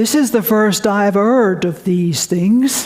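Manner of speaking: put-on northern English Yorkshire accent. Recalling a colloquium where a scientist spoke from the front row, Fred Hoyle's Yorkshire accent. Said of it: "I'll imitate his Yorkshire accent".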